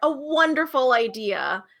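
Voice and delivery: slow, drawn-out, sarcastic praising tone.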